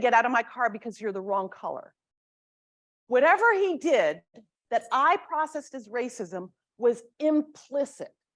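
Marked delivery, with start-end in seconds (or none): none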